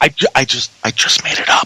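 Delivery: speaking in a whisper. Admitting to the others that the animal was made up: whispering. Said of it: "I like how he whispers when he's talking".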